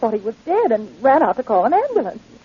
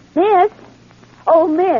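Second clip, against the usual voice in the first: loud, high-pitched calling out; 6 semitones higher, 4 dB louder than usual. A young lady calls out to someone in a public library, loud calling out. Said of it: "lower your voice".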